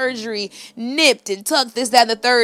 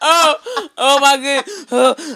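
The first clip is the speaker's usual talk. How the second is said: laughing hard, breathless, higher and louder; 4 semitones higher, 5 dB louder than usual. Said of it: "I can't breathe".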